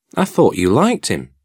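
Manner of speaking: astonished, taken aback. Pip answers his guardian's advice about Drummle: surprised.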